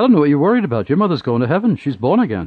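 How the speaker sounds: put-on heavy Welsh accent. Retelling what he said after visiting the speaker's mother's sickroom: thick Welsh accent. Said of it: "in his very thick Welsh accent".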